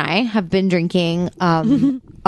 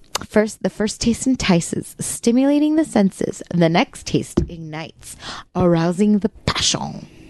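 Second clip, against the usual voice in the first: fake French accent throughout. Tasting wine with the group, describing its taste in a put-on French accent. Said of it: "And why are you French?".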